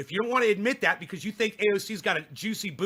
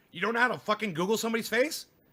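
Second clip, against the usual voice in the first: plain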